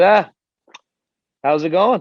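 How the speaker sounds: put-on loud, very thick Connecticut accent. Imitating a business manager greeting a thousand people: thick Connecticut accent. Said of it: "super thick Connecticut accent".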